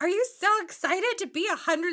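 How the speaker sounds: mock bubbly, peppy newscaster. Retelling a news visit to a woman turning a hundred: imitating a bubbly newscaster. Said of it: "the newscaster is, like, so bubbly".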